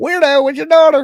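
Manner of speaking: high-pitched, shrill, squawky parrot voice. Retelling what a parrot kept saying, in a parrot voice. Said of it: "in that voice".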